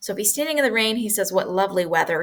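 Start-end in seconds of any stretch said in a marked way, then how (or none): none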